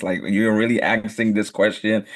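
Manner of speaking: normal talking voice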